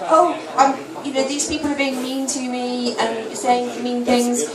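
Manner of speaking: normal talking voice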